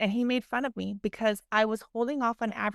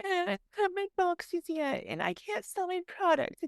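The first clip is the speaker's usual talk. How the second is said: taunting, belittling mock voice, slow, pitched up; 9 semitones higher than usual. Retelling a business dinner where he mocked her: imitating someone mocking her. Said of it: "he starts making fun of me".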